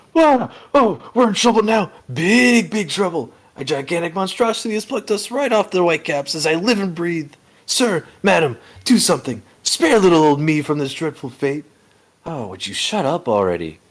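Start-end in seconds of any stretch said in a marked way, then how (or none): 0.2-11.7 very high, panicked, freaked-out screaming wail. Voicing a character who screams on the ship: panicked screaming Caribou. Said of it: "Caribou's just freaking out".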